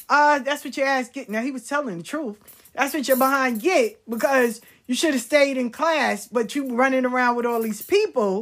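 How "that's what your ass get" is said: mocking, jeering voice through laughter. Retelling how a friend's stepbrother laughed at you, imitating Mark laughing. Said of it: "he would laugh and be like".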